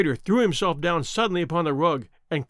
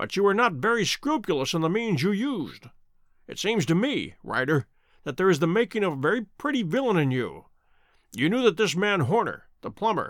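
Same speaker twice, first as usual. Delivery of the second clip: plain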